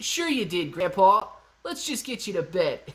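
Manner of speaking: put-on convincing voice of a young kid. Playing a grandkid answering grandpa's boast, kid's accent. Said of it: "that was a pretty good kid's accent".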